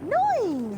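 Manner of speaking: high, loud, very cheerful outburst. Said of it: "he'll just very cheerfully say".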